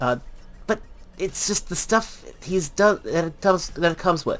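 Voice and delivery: stuttering over repeated words. Describing a figure and what it comes with, stuttering. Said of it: "I'm stuttering here".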